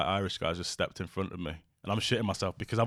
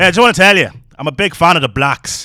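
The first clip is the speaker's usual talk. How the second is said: put-on Irish accent, higher and louder; 9 semitones higher, 16 dB louder than usual. Retelling what a man in the town said: imitating an Irish accent. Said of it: "you're gonna have to excuse the accent".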